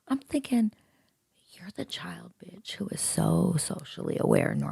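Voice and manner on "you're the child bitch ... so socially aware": hushed whispering voice, quieter. Retelling what was thought about someone nearby, in a whisper. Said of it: "I'm whispering so she doesn't come hit me".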